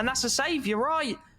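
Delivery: high-pitched disbelief.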